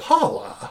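breathy, put-out, annoyed whisper. Imitating how someone says a character's name: mock-annoyed Paula. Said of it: "she says it in a way where she just seems annoyed".

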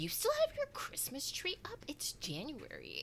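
put-on whispered, shaming, disbelieving, derisive scorn. Quoting a man who walked in, with a mock-derisive, shaming tone. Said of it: "with such derision and shame in his voice".

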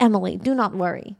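put-on soft Russian accent. Retelling a dentist visit, the speaker quotes her dentist in Dr. Galib's Russian accent. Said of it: "she goes in her Russian accent".

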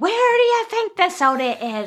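very high, shrill yelling. Retelling how a friend's mom answered a party guest: imitating a mom yelling. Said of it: "the mom just started yelling".

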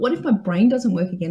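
ordinary talk

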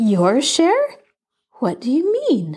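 high, swooping, amazed and astonished voice. Cousin Ann, ironing, replies to Elizabeth Ann's apology in an astonished voice. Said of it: "in an astonished voice".

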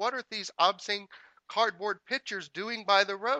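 mock furious officer yelling, very high, very loud. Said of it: "the officer's still angry".

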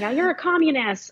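play-acted old person's high, mild half-yell. Recalling how older people shout at others: imitating older people screaming. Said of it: "older people screaming".

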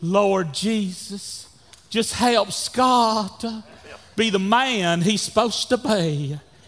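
little, slow Southern belle voice. Recalling his mom praying for him, quote her in a little southern belle voice. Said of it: "her little Southern Belle voice saying".

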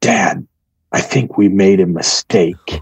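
hushed, confiding, voiced stage whisper. Retelling a daughter's words in the hammock at night: imitating a whisper. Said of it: "she comes over to me and whispers".

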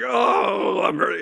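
mock grunt. Retelling trying to get a busy nurse's attention: imitating a louder grunt for attention. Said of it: "I try to grunt louder to get her attention".

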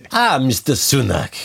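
put-on classic detective accent. Joking about a detective on the Orient Express: Hercule Poirot voice. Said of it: "Sort of Hercule Poirot trying to work out".

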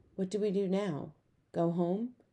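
quiet, soft voice. Narrator reads Jamie asking the sobbing Claudia what comes next, quietly asking. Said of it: "quietly asked".

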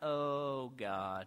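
very low, solemn, hushed praying murmur. Speaker showing the audience how they sound praying, in a prayer voice. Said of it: "My prayer voice. Hear it?".

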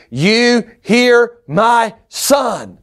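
put-on commanding shout. The speaker tells listeners what God is saying today: God yelling from heaven. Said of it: "He's yelling at us from heaven".

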